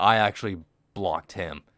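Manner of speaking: ordinary talk, nothing marked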